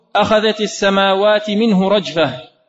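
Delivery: ordinary delivery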